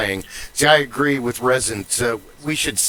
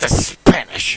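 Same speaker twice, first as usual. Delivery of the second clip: mock-spat delivery, louder; 3 semitones lower, 4 dB louder than usual. Explaining how they like saying certain words, the speaker spits it out like Draco Malfoy. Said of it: "Draco Malfoy says the way, word Potter. They uh, practically spits it".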